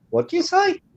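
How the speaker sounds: very high, baffled squeak. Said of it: "I'll be like".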